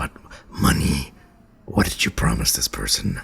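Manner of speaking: secretive, very low hushed whisper. Voicing a character who cuts into others' conversation, whispering. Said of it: "And he whispers".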